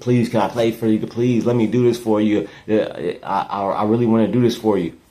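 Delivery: acted, earnest pleading, imploring over and over. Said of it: "begging, pleading".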